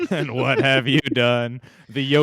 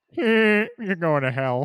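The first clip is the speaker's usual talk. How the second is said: silly cartoon father voice; 6 semitones higher than usual. Imagining St. Peter as Peter Griffin judging his life, Peter Griffin voice. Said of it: "how would that sound?".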